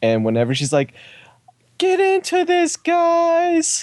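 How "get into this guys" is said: put-on very high, very slow, drawn-out shrill yell. Retelling a wrestler yelling at the crowd: imitating Natalya screaming. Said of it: "Natalya is screaming".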